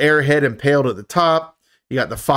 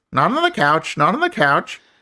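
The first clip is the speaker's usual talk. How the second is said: squawky talking-bird parrot voice; 3 semitones higher than usual. Recapping a scene, the speaker voices the parrot's line in parrot voice. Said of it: "we get the parrot voice".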